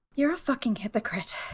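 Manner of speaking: spoken very softly, barely audible. Selwyn speaks in Elvish once no guards are around, very, very quiet. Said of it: "very, very quietly in Elvish says".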